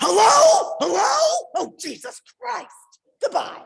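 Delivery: mock very high, loud, agitated, drawn-out outburst. Retelling a parent's reaction to a spam call: imitating dad freaked out. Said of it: "he would get freaked out about".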